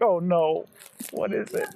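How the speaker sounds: put-on terrified fright, high-pitched and alarmed. Imitating a parent's reaction on opening the door: imitating a terrified parent. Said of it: "I'd be terrified".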